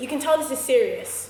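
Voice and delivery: ordinary talk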